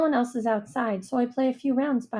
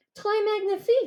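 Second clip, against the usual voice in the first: small, squeaky, very high-pitched voice; 10 semitones higher than usual. Reading a friend's reply during a hopscotch game, in a high-pitched voice. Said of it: "Danielle says in her high-pitched voice".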